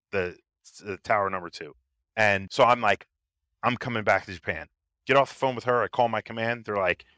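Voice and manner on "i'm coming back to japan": plain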